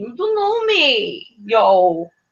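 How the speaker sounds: clumsy, very slow, swooping fake Puerto Rican accent. Retelling a reality-show moment, imitating a failed put-on Puerto Rican accent. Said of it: "trying to affect, like, a Puerto Rican accent".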